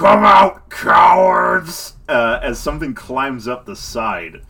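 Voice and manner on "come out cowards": booming yell, louder and slower. Narrating a scene, voicing something unseen that yells at the players: massive booming yell. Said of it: "a massive booming voice yell out".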